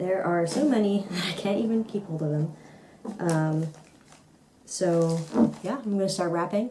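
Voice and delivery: soft, hushed talk dropping to a whisper. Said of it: "I have to talk a little bit quietly".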